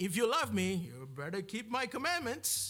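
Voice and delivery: put-on, imitated Indian accent. Preaching on a verse, quoting a misreading in an Indian accent. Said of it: "I went into my Indian accent there".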